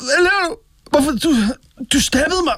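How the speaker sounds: high shocked gasp with pain.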